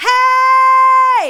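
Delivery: very loud, very high, long drawn-out yell. Showing a long shout to reach a distant friend: long stretched shout. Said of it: "Take a big breath".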